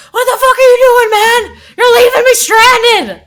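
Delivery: very high, shrill, very loud pirate yell. A game master voices a pirate yelling at another pirate running away; yelling out. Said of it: "and he yells out".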